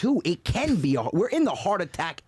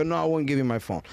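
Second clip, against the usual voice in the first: plain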